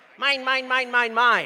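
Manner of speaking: squawked over and over like a gull. Speaker leads the audience in saying it together, Finding Nemo seagull voice. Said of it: "Best seagull accent".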